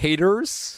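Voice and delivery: put-on American accent. Calling out haters who tried to report a TikTok, fake American accent. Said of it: "That's my fake American accent".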